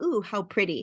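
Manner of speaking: ordinary talk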